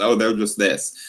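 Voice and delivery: put-on dismissive tone. Imitating athletes talking about fans in interviews: imitating athletes' dismissive tone. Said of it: "dismissive tone".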